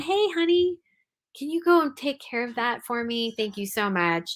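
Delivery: calm, kindly, gentle, peaceful tone. Showing how you first ask again for chores to be done: gentle, peaceful, smiling request. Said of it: "You gently, peacefully, with a smile on your face".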